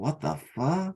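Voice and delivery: whispering. Acting out a character's turn on seeing the room: whispering to himself. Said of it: "just whisper to myself".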